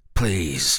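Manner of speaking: feeble voice. Caught leaving, he answers the narrator's question weakly. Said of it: "he said weakly".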